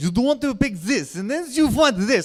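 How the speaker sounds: put-on foreign accent, Russian or German. Retelling what a saleswoman at the shop said: put-on Russian or German accent. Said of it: "Russian lady. She's like, "You," or German lady".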